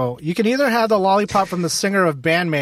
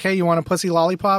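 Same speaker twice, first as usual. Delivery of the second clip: ordinary talk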